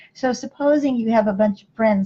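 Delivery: normal talking voice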